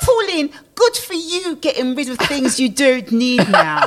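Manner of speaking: high, put-on posh reading-aloud voice. Reading aloud a message someone else wrote, in a put-on posh voice. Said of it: "Why do you have to say it like that? Olga is not posh".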